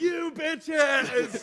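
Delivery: put-on, all-out, high-pitched scream. Pitching a movie ending in conversation, acting out the final line: mock screaming. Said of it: "while screaming".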